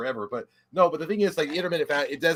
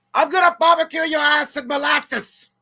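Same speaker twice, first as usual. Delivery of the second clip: shrill, very high-pitched, loud holler; 12 semitones higher, 5 dB louder than usual. Performing a requested movie line: imitating Loomis yelling. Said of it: "could you please yell, ... in the voice of Loomis".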